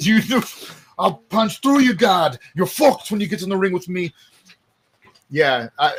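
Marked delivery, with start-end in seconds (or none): 0.0-4.1 put-on Irish accent. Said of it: "he hit him with the Conor McGregor accent".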